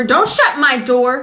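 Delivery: sudden loud yell. Mid-tutorial, calling out to someone shutting his door, yelling. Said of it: "Why are you yelling?".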